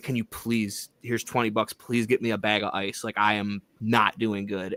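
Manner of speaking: acted-out, mock pleading tone. Retelling asking campmates met that same day for help; retelling own begging. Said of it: "I was begging my campmates".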